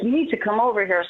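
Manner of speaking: ordinary delivery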